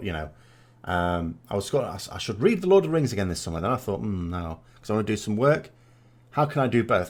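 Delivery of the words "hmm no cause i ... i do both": usual speaking voice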